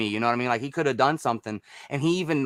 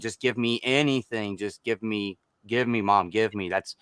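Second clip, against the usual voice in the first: put-on desperate pleading tone, lower; 3 semitones lower than usual. Retelling a film scene, begging at the door for his mom: imitating desperate begging. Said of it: "just begging for his mom for money".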